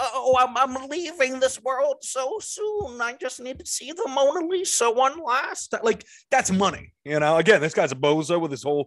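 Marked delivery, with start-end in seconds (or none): 0.0-5.8 put-on very high-pitched old woman voice. Describing a man disguised as an old woman, the speaker imitates an old woman voice. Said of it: "you gotta respect an old woman disguise".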